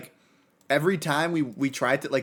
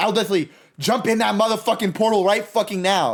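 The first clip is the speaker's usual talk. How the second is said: all-out, high, loud scream; 7 semitones higher, 7 dB louder than usual. Retelling a tense game moment to teammates: retelling a scream. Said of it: "dead ass screaming at the top of my lungs".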